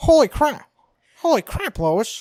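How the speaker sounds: very high, loud, belted-out exclamation. Friends comparing impressions, doing a Peter Griffin voice. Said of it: "my bass voice is just too high pitched".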